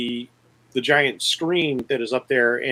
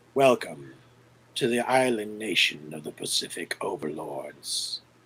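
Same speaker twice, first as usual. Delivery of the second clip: very low, hushed, raspy, wheezy voice; 8 semitones lower, 7 dB quieter than usual. Narrating a comic, the villain addresses the people over loudspeakers, raspy and wheezing. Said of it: "a raspy, wheezing voice starts echoing".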